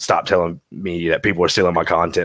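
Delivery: ordinary delivery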